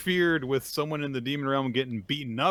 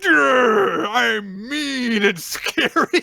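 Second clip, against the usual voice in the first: play-acted very high, very loud, slow, booming menace; 11 semitones higher, 10 dB louder than usual. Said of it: "Go be an asshole".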